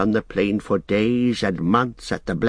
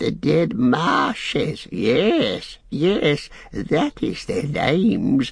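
very slow, high, swooping creature cackle, drawn out; 5 semitones higher than usual. Narrator reading Gollum's reply to Sam's horrified cry; Gollum cackling. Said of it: "he cackled".

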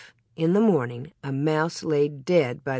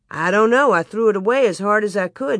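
usual speaking voice

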